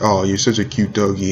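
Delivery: ordinary talk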